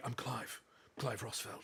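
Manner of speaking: hushed, breathy hero voice. Retelling joking around with a friend at an event: Clive voice. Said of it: "doing the Clive voice all day".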